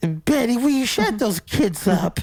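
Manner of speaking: very high-pitched, entitled, demanding tone. Joining in acting out complaining Karens: imitating an entitled Karen. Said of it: "so Karen mosh pit".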